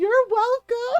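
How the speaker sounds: mock, high yell through laughter. Retelling what one of the guys yelled while laughing: imitating a laughing yell. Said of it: "one of the guys yells".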